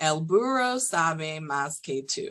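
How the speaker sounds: Spanish, American accent, English R, drawn-out vowels. Demonstrating a spanish sentence for viewers, in an american english accent. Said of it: "I'm going to say it in an American English accent".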